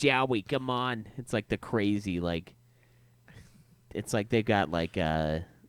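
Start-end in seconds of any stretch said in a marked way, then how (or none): 0.0-1.1 exaggerated, warped New York accent, pitched up. Explaining how a name gets pronounced, exaggerated New York accent. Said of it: "It's a really fucked up like New York accent".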